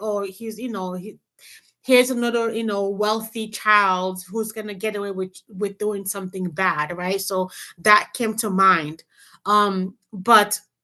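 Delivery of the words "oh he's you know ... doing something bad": normal talking voice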